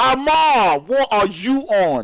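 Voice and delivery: shouting in excitement. Calling a team's win in an esports match, shouting in excitement. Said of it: "I need to stop shouting".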